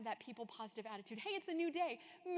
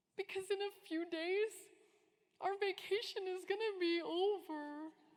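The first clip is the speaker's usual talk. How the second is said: put-on high, weepy voice of a child in tears; 8 semitones higher than usual. Retelling a parent asking a crying daughter what is wrong: imitating Sophie crying. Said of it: "Why are you crying?".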